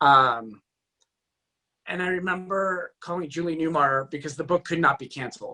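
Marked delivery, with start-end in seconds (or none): none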